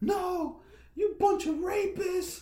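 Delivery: furious, shrill, very high angry screaming yell. Retelling what a woman shouted at the owner; retelling her yelling. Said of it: "she started yelling at them".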